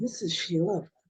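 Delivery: very deep, low, sexy, sultry radio announcer voice. Describing women on headphones, the speaker imitates one introducing herself, mock-sexy radio voice. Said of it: "they start sounding sexy all of a sudden".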